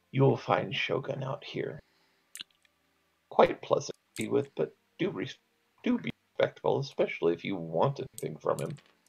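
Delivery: very soft, quiet, almost a whisper. Game master voices a character directing the party, very quiet, almost whispering. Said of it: "in a very very quiet voice, almost a whisper".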